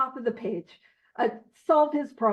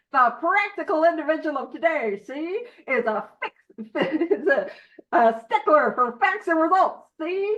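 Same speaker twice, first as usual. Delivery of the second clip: put-on old-timey 1940s mid-Atlantic accent; 2 semitones higher than usual. Reading a passage's second paragraph aloud, in a 1940s mid-Atlantic accent. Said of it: "mid-Atlantic accent".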